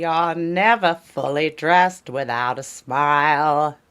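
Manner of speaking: put-on old-time radio announcer voice. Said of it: "you put the, you did it".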